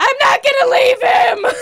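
very high, loud, drawn-out screaming shout. Retelling refusing to leave an injured man: retelling own screaming. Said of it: "I'm screaming at her".

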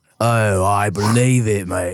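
very low, slow deep voice. Joking about Idris Elba over a beer: Idris Elba impression. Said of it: "that's just how I imagine Idris Elba talking".

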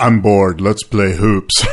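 low, slow, bored drawl.

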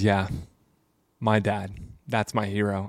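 put-on tearful voice. Retelling an interview where Tom Brady names his hero: imitating Tom Brady tearing up. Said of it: "And he starts tearing up".

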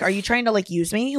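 ordinary delivery

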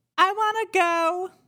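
very high, tiny little ghost voice. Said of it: "What do you hear this ghost saying".

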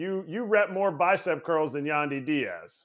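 ordinary delivery

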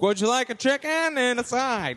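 bad fake Boston accent. After apologizing to boston listeners, a host tries the accent again: bad boston accent. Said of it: "That's certainly not a Boston accent".

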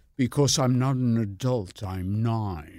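put-on cold, intellectual voice. Retelling what Jerry Lewis would say: cold, intellectual Jerry Lewis voice. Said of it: "he would say this in a very cold, intellectual way".

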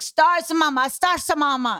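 put-on child voice with Spanish accent. Retelling daughter demanding stars in the daytime sky: imitating daughter's spanish accent. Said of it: "She's got a Spanish accent".

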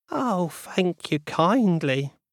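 high-pitched, mildly irritating wailing voice. Narrator reading the lady's thanks to the soldier, in a slightly annoying wailing voice. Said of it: "she wailed in a slightly annoying voice".

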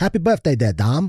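clumsy, weak put-on British accent. Urged to give a birthday greeting, trying an attempted British accent. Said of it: "give him your happy birthday in a British accent".

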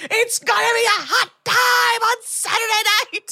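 acted, overexcited shriek, very high-pitched. Retelling a scene where a very excited miner screams: imitating an excited scream. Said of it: "he literally screams".

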